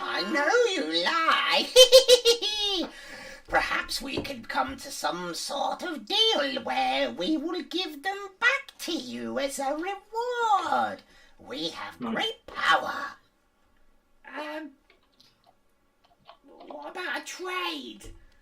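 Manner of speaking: very high menacing, wheedling, sly hag voice. A game master voices a hag speaking from somewhere in the room: hag voice. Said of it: "you hear one of the hag's voices".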